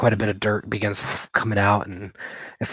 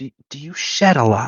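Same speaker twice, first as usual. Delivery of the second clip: embarrassed, sheepish, higher; 5 semitones higher than usual. A narrator voices a woman speaking to the listener, embarrassed. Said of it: "she looks very embarrassed".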